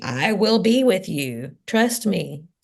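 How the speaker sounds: big, grand, divine heavenly voice. Retelling Moses' doubts, voicing God's reply in a big booming voice. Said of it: "I hear God in a big booming voice saying".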